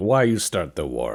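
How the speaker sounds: put-on Italian accent. Imagining confronting those who started the war, the speaker puts on a mock Italian accent. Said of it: "I'm gonna be very Italian about it and be like".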